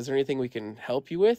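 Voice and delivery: ordinary talk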